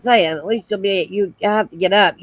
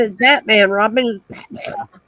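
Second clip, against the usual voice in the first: ordinary delivery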